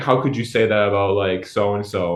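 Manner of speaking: normal talking voice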